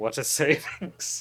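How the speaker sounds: miserable, totally bummed, drawn-out delivery.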